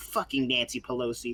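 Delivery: ordinary talk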